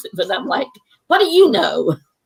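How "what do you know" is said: mock bristling, high-pitched, defensive tone. Retelling her reply when her writing is criticised: imitating own defensive reply. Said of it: "I get real defensive".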